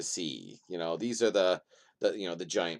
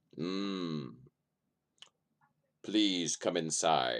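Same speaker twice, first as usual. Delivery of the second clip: low, deep rumbling voice, drawn-out mm; 3 semitones lower, 4 dB quieter than usual. Game narrator voices figures greeting players sent to see a lady: deep rumbling voice. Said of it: "they say, in a deep rumbling voice".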